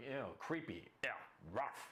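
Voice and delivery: mock grossed-out, slow snarl of revulsion. Acting out a young woman's reaction to a timid approach: imitating a snarling woman. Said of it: "She's gonna snarl at you".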